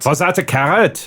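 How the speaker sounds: put-on German accent. Repeating a character's line on request: German accent. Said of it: "I can actually do a good German accent".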